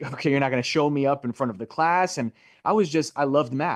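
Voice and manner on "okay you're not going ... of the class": plain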